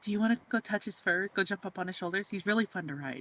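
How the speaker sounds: secretive, in-character half-whisper, like an aside. Voicing a character half-whispering an invitation to another: half-whispering in character. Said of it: "Sylvie's gonna whisper in, in, again in Draconic to Shay".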